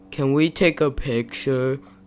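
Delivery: spaced-out stoned voice, very low and hushed. Telling a story about meeting two girls, imitating Owen's stoned voice. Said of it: "in the most stoned voice".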